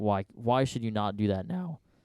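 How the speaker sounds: cracking, breaking voice. Retelling a writer's advice to the other speaker, voice cracking. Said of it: "Voice crack".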